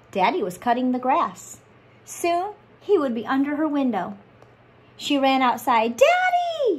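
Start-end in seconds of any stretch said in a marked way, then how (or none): 6.0-6.8 very high, loud, shouted call. Emmy runs outside waving her arms at her father, who is mowing the grass, shouting. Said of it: "she shouted, waving her arms".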